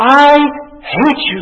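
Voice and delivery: high, loud scream.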